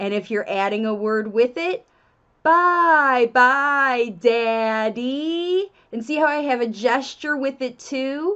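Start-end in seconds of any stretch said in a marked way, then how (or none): 2.4-5.7 speaking very slowly. Modeling a phrase for parents to say to their child, very slow. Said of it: "you should be saying it very slowly".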